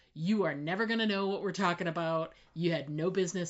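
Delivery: mock menacing tone, low and quiet. Acting out how she answered a question about Overseer stuff: retelling a menacing tone.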